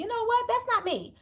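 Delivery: shrill, high-pitched yelling shout. Speaker talks to listeners about embracing their hidden side; yelling. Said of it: "I didn't mean to yell".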